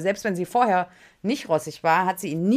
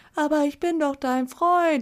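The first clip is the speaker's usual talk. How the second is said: crestfallen, hurt, sheepish, small voice, pitched up; 8 semitones higher than usual. Retelling how a rejected boyfriend calls over from his corner: mock-sheepish plea. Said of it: "ganz betröppelt in seiner Ecke".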